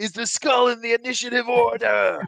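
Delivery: shrill, very high, very loud scream. Voicing Zed calling out a question to everyone, screaming. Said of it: "screams out to everyone".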